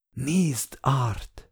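hushed, barely voiced whisper. A companion speaks to Art, whispering. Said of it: "suttogta társam".

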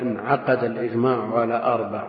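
ordinary talk

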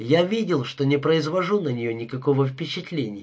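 ordinary delivery

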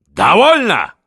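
high, straining, bellowing roar. Minikh, after long enduring the generals' objections, roars at them with strain. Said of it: "заорал, весь красный от натуги".

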